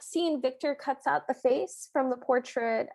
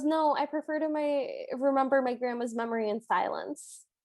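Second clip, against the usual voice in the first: ordinary talk, nothing marked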